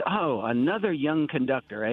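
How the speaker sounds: very gravelly, rough voice. Retelling how Lenny greeted a young conductor: imitating Lenny's gravelly voice. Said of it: "In a real gravelly voice".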